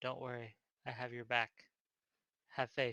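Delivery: soft, reassuring half-whisper, close in the ear. Reassuring an ally in character, leaning close to his ear: half-whispering in someone's ear. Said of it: "I lean close and whisper in his ear".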